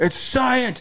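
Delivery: mock very high, shrill, insistent yelling. Retelling how a man without a mask kept yelling: imitating someone yelling. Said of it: "He kept just yelling".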